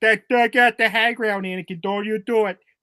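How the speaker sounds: put-on heavy Chicago accent. Joking that Obi-Wan Kenobi has a Chicago accent, Obi-Wan Kenobi in Chicago accent. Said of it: "Obi Wan Kenobi has the uh, the fucking Chicago".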